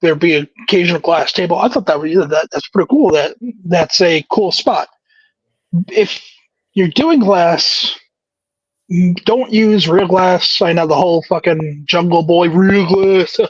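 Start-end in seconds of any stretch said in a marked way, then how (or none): 12.5-13.4 wrestler-style callout delivery. Quoting a wrestler's line about glass: imitating Jungle Boy in a deep voice. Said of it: "he didn't say it with a deep voice like that".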